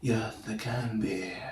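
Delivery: bad, soft, slow put-on voice, murmured low-key. Retelling a movie scene, quoting the detective Mike: bad Donald Glover voice. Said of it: "That's my Donald Glover voice".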